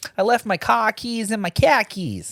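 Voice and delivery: high, put-on Boston accent, laid on thick. Asked about an accent, the speaker repeats a joke line, boston accent. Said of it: "Was that Boston?".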